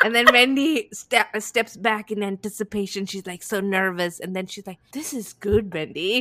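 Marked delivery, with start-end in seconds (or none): 4.9-6.2 put-on solemn, self-important, earnest mentor tone. Retelling Karen's reply to Wendy in a TV scene: imitating serious Karen. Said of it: "She was so serious".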